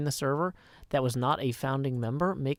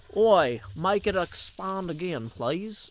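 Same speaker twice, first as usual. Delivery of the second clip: clumsy, slow, bad put-on Australian accent; 4 semitones higher than usual. Rereading a viewer's donation message a second time: bad Australian accent. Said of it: "since that's an Australian currency, it might be more like".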